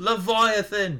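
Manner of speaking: put-on British announcer accent. Trying a commentator impression by finding the vowels: British Nigel McGuinness impression. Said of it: "doing a Nigel McGuinness impression... you can't just do a British voice... That's about as close as I can get".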